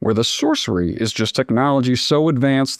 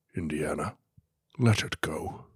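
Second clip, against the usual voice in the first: put-on Scottish actor voice, much lower and quieter; 10 semitones lower, 12 dB quieter than usual. Insisting to the others that you can do it, try a Sean Connery impression. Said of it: "Let's hear those Sean Connery impressions".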